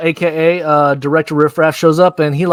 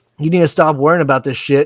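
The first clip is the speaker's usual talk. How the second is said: normal talking voice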